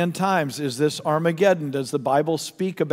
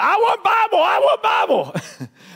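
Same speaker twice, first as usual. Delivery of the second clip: put-on very high, loud, swooping, drawn-out child's scream; 5 dB louder than usual. Telling of a kid in the front row before the bible is opened, imitate him screaming out. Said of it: "screams out".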